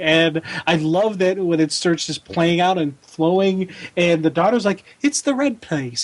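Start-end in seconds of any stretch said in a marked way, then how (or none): 5.0-6.0 put-on eerie, high, creepy little-girl voice. Quoting the daughter from the comic: creepy little girl voice. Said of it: "that little creepy little girl voice".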